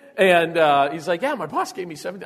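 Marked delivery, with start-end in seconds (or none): 1.2-2.3 mock-excited, higher and quieter. Quoting a guy on the radio about money from his boss, imitating an excited guy. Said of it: "he was pretty excited".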